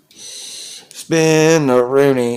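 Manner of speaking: slow, loud drawn-out call.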